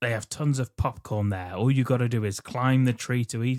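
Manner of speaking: usual speaking voice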